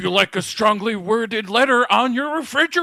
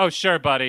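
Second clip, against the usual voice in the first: mocking, disbelieving, dry sarcastic tone; 5 semitones lower than usual. Imagining how they would react in someone else's place: sarcastic. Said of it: "I'd start doing the sarcastic, like".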